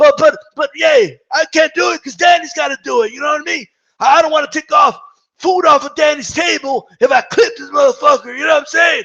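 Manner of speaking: raspy, high-pitched rambling voice. Imitating Angel Garcia bragging about his son Danny: raspy Angel Garcia impression. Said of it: "that raspy-ass voice".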